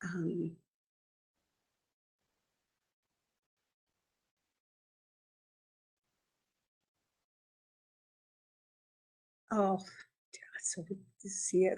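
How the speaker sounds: overcome with emotion, words faltering, voice giving out. A Mi'kmaq language teacher addressing listeners on an important topic, emotional, voice giving out. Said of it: "I'm already getting emotional".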